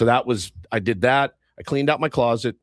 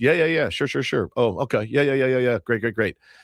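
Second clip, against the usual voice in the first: put-on absent-minded, glazed-over, rote, on-autopilot tone. Retelling listening to a repairman's explanation: imitating glazed-over agreeing. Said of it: "Like you on the phone".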